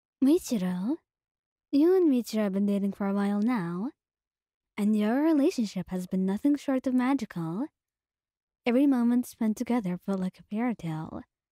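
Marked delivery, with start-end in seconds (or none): none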